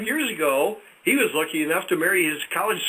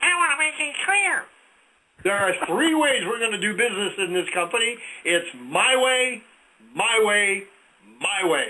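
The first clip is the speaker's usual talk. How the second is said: put-on, bossy, commanding commercial announcer voice. Retelling a commercial where a small man in a suit speaks, imitating a tiny suited man. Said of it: "with a voice like".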